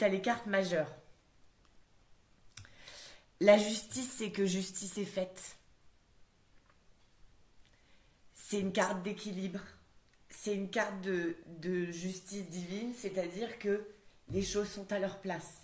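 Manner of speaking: moved, tearful, crying a little. Explaining a tarot card to grandmother while moved: crying a little. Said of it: "je suis émue, du coup, je pleure un peu".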